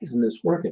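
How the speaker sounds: mumble under the breath. Retelling muttering at a broken wireless printer: imitating himself mumbling under breath. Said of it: "when I mumble under my breath".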